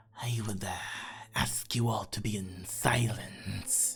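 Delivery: lizard creature character voice. Voicing a lizardfolk who orders the prisoners to keep silent: lizardfolk character voice. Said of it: "you notice a lizard folk".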